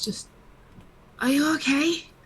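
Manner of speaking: shy, meek, timid, tentative tone. In a role-play scene, checking on someone, very quiet timid voice. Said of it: "just very quiet, very timid voice".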